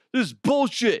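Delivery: put-on angry, fed-up outburst. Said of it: "He's mad".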